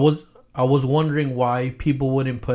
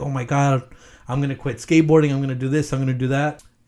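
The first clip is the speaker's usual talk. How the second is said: put-on ecstatic, excited voice. Retelling opening a new guitar at Christmas: imitating own ecstatic reaction.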